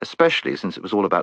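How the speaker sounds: ordinary delivery, nothing marked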